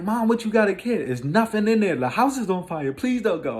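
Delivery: very high-pitched, pleading, begging voice. Retelling begging mom not to go back in: retelling own past begging. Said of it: "I'm begging her not to go".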